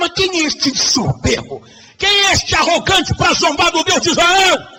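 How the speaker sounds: put-on outraged, scornful, high-pitched indignant cry. Retelling a bible story, voicing an indignant challenge: retelling a shout. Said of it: "quando ia gritando".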